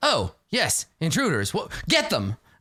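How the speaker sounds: animated character voice with swooping pitch. A game master voices a character who opens the door and spots intruders. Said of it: "And he's like".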